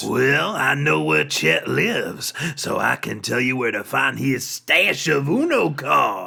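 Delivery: speaking in a devil character voice. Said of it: "I'm a devil. I can totally pull it off".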